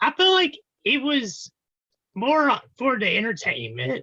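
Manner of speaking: voice cracks on "entertainment". Talking about a strange NASCAR race, voice crack. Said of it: "I had a bad voice crack there".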